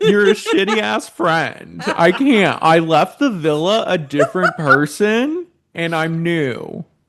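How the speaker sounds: fake tearful voice. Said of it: "don't do all that crying shit".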